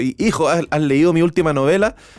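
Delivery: ordinary delivery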